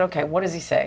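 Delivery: ordinary talk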